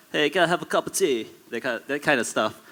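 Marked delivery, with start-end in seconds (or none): 0.1-1.2 badly done, pitched-up fake British accent. Showing how friends do their best british accent in the videos, bad fake british accent. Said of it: "do your best British accent".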